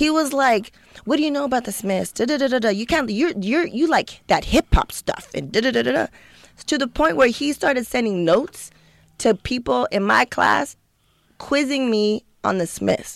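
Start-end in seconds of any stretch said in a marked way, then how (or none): 1.0-6.1 put-on worked-up, indignant, angry kid rant. Retelling how an upset kid from a higher gifted class confronted them: imitating an upset, angry kid. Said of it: "he got real kind of postal with me".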